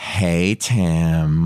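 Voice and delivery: goofy, silly felt-puppet character voice, drawn-out words.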